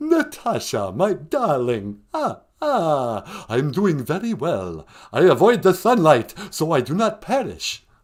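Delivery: theatrical vampire voice, every ah drawn out long. Playing a caller to a podcast: the Count voice. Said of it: "the Count's on the phone".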